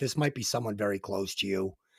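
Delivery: very calm voice, low and soft. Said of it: "very calmly just saying".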